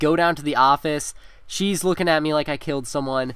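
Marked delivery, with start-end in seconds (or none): none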